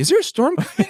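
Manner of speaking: high-pitched, panicked voice.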